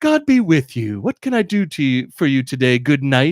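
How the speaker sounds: big, syrupy, sugary, overly nice game-character voice. Describing how game NPCs greet the player at first: mock overly nice NPC voice. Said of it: "starts out, like, really nice".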